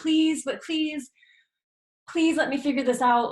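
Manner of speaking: high, unsure, doubtful, pleading tone. Explaining how tone changes without self-trust, showing a pleading, doubting tone. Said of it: "our tone of voice is different".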